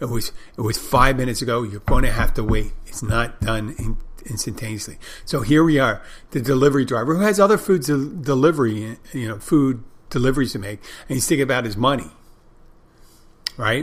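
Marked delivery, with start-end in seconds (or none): none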